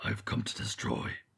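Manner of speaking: whispered, hushed, gravelly villain rasp. Imagining how an enzyme supervillain would talk: gravelly supervillain voice. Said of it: "would have more a gravelly voice".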